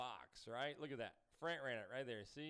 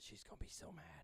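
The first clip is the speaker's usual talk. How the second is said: hushed, soft, breathy whisper under the breath; 2 semitones higher, 7 dB quieter than usual. Retelling calling someone in and the words said then: retelling a whisper. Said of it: "I whispered it when I called her".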